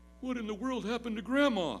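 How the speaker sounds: put-on high, quavering, trembling three-year-old voice. Telling a joke, voicing a three-year-old, imitating a trembling child. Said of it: "in a trembling voice say".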